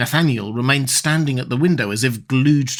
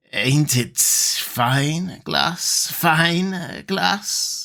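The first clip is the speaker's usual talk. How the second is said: grating, unpleasant, harsh voice with very slow drawl; 3 semitones higher than usual. The optician Coppola asks Nathaniel about his glass; harsh, unpleasant voice. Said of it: "in his harsh, unpleasant voice".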